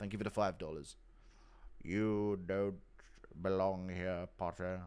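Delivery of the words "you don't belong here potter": very slow drawl, every word drawn out. Speaker, admitting he has no real impression, tries one anyway: Snape impression. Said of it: "I don't really have a fucking Snape impression".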